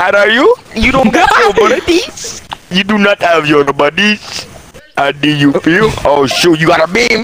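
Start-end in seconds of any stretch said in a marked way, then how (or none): 0.0-5.9 put-on Indian accent, much higher. Gaming with a friend who asked for the Indian accent again: Indian accent. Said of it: "Can you go back to Indian accent?".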